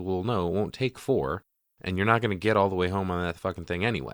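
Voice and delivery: ordinary talk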